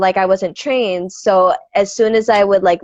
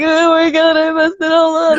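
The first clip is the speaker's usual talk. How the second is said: teary, higher-pitched voice speaking through crying; 9 semitones higher than usual. Retelling being in the hallway after a rough performance: imitating own past crying. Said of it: "in the hallway crying".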